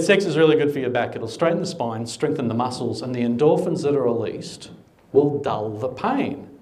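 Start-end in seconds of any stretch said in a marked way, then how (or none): none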